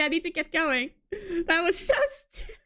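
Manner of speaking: words breaking up with laughing. Reacting to a funny exchange, laughing while talking. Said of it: "I need to stop laughing".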